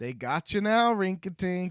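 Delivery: loud, mocking, laughing taunt. Retelling the story, Prince Bobo laughs at Rinkatink, laughing Prince Bobo taunt. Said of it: "Prince Bobo starts laughing and he's like".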